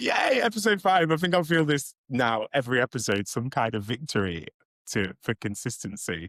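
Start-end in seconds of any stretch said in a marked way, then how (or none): 0.0-1.1 high, bright, short little cheer. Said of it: "So I'm like".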